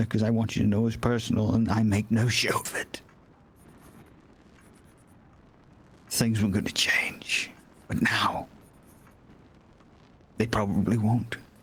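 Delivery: hushed, very soft, very quiet voice. Speaking to someone you call sir; very quiet voice. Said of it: "My voice is very quiet, sir".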